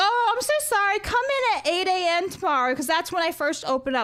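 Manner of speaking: acted, giggling while talking. Retelling a repairman's apology on the phone, imitating someone giggling. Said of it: "he's giggling, right? And he's like".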